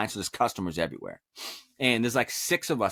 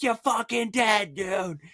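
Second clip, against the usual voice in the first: very high, raging, threatening scream; 11 semitones higher than usual. Speaker retells what they yelled while walking around looking for someone, retelling screaming at top of lungs. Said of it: "I'm screaming at the top of my lungs".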